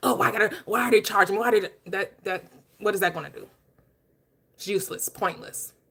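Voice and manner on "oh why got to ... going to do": pretend angry grumbling, mock mad complaining tone. Acting out a pointless complaint about paying for water: pretend angry grumbling. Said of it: "I'm so mad".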